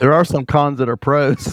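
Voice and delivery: said while laughing.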